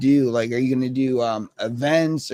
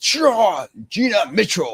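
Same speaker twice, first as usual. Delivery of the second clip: play-acted powerful delivery, pitched up; 6 semitones higher than usual. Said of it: "it was just the way you sounded".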